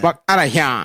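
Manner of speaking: put-on bratty cartoon boy voice. In a group joking about voices, a speaker repeats the line: Cartman voice. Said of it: "It's Cartman, dude".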